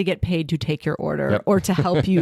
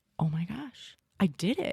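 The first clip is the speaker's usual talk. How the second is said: very slow, drawn-out, proud declaration; 2 semitones higher, 9 dB quieter than usual. Retelling how a child came back after buying fries: imitating a child speaking proudly.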